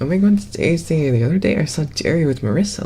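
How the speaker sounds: high, showy, flamboyant put-on voice. Trying out different voices on request, doing a flamboyant voice. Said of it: "That's more flamboyant".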